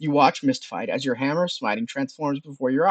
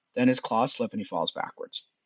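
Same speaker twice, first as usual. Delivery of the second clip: usual speaking voice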